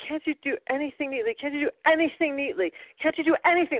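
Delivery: male voice, high, repeated hollering. Retelling a scene where a man yells at a woman holding a hammer, imitating a man yelling. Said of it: "Like he's just yelling at her".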